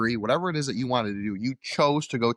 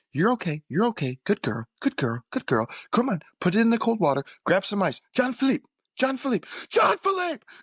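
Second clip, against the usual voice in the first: put-on calming chef voice, higher pitched; 10 semitones higher than usual. Retelling a chef calming a burned cook: imitating Gordon Ramsay. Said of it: "So he's like".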